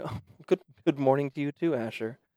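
very soft-spoken, hushed voice. A voice from inside the house greets a visitor: very soft voice. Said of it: "very soft voice from inside".

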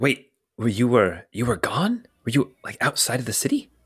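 secretive, conspiratorial, confiding tone. Voicing a character who leans in toward the listeners: conspiratorial. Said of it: "he kind of leans in conspiratorially and he says".

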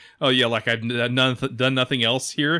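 ordinary talk

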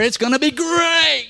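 slow, booming, greatly stretched cartoon tiger mascot growl. Preaching to a crowd, inviting them to join in with energy, and playing up a booming cartoon tiger growl. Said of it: "Put a little gusto in it".

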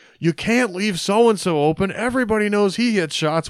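put-on sarcastic shouting. Retelling a guy behind him at the Nebraska game, mock sarcastic yelling. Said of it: "was sort of sarcastically yelling".

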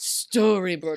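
put-on solemn, incantation-like delivery. Imitating a character lifting her chin: solemn invocation. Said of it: "saying Storybrooke like she was invoking something".

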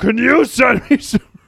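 slow, creaky, put-on monster voice. Imagining a friend calling on the phone, imitating Rob. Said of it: "That's a spot on impression".

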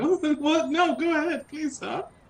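high, timid, cowering whimper. Retelling own reaction to an angry man at night: imitating own whimpering. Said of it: "I turned into a whimpering pussy".

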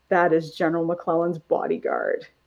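swooping, sarcastic yet melancholy tone. Retelling a man's reply to another man, imitating a sarcastic yet melancholy tone. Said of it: "kind of sarcastic and yet melancholy".

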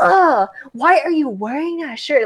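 voice dripping with disgust. Retelling a stranger's reaction to a shirt with a curse word: imitating a disgusted voice. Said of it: "she had a look of disgust".

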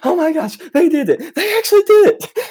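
very high, very loud, excited freaking out. Retelling watching a video in band class: retelling own freaking out. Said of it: "I was freaking out in band class".

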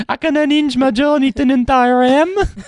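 very high-pitched, botched, attempted Danish accent. Asked to do a Danish accent, the speaker attempts one. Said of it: "That is not a Danish accent".

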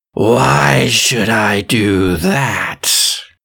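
frothing, drooling beast voice. A storyteller voices a beast answering a demand to release a man, creature voice. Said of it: "And he says".

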